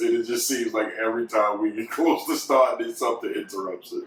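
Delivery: words broken up by laughter throughout. Explaining that recording the intro kept getting interrupted, laughing while talking. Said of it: "I can't stop laughing".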